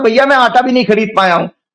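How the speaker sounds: ordinary talk, nothing marked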